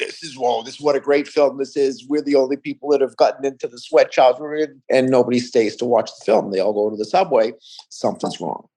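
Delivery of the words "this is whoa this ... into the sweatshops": ordinary delivery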